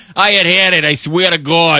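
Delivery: put-on Boston accent. Retelling what a guy in Massachusetts said: Boston accent. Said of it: "this guy couldn't be more like Boston-ish".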